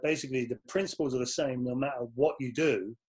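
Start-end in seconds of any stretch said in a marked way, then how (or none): none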